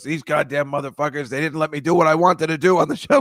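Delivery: mock-angry, furious ranting. Describing a director's cut, the speaker acts out the director: mock-angry rant. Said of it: "he's like really angry".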